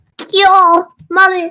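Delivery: high-pitched nasal put-on voice. Showing someone how to get the voice that high: high nasal voice. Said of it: "It's all about the nasal".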